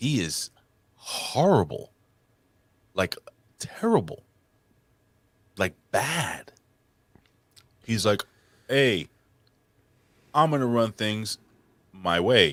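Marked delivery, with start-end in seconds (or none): 8.7-12.5 lifeless, empty delivery with nothing behind it. Mocking a wrestler's promo style: imitating a monotone promo. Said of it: "so monotone".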